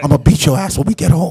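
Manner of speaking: voiced, hissed stage whisper. Retelling a movie scene of a man dancing with a woman: imitating a whisper. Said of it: "he's whispering".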